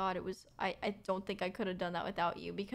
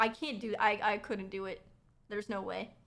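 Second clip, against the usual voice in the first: ordinary talk, nothing marked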